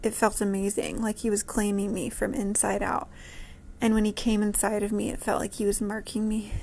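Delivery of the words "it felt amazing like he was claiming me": usual speaking voice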